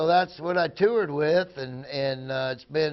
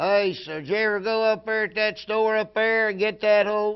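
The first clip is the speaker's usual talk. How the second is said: pitched-up, exaggerated rural country accent; 6 semitones higher than usual. A performer shows an interviewer how he talks in character: Mater character voice. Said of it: "then it's more like this".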